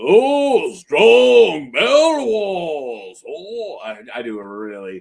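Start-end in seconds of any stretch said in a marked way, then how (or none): 0.0-3.2 bad booming, very slow voice, stretched "oh". Reading a character name aloud in Andre the Giant voice. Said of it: "Andre the Giant".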